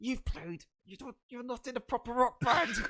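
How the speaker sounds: mock-angry outburst. Recalling how angry he got, the speaker re-enacts what he said, retelling an angry rant. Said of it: "I was so angry".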